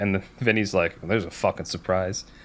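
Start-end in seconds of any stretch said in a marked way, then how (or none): 1.0-2.2 muttering under breath, lower and quieter. Retelling a courtroom scene, the reply to the judge: imitating muttering under breath. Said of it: "under his breath".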